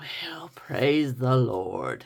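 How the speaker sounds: low, deep, resonant baritone voice. Recalling a father reacting to lame things: imitating dad's baritone voice. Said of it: "in his baritone voice".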